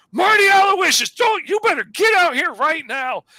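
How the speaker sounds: very high, shrill shouting. Retelling a story scene where the girlfriend yells at marty: imitating the girlfriend yelling. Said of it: "the girlfriend starts yelling at Marty".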